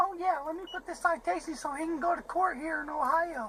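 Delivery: put-on, mocking fake lady voice. Ranting about a traffic stop, mimicking the police officer in a fake lady voice. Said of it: "Why are you doing a fake lady voice".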